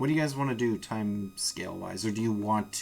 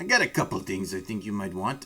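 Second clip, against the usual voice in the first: put-on drunk dwarf voice with accent. A game master voices a dwarf offering the players items, in a drunk dwarf voice. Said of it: "He's a drunk dwarf".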